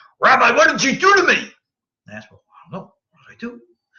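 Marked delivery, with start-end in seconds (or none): 0.2-1.4 play-acted furious, very loud, shrill, angry shouting. A rabbi retells a man he taught coming up to him, retelling an angry man. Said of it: "he comes up to me very angry".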